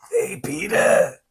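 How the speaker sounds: very high, squeezed, creaky rasp. Doing a goblin voice from Spider-Man for the other speaker. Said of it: "That's so good".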